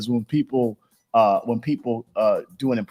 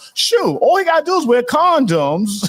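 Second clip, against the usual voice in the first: pushed way up, high-pitched put-on voice; 13 semitones higher, 3 dB louder than usual. Showing what you say on the show all the time, do a Maria Davis impression. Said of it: "that's my best impression right now, Maria Davis".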